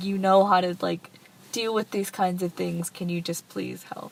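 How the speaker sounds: usual speaking voice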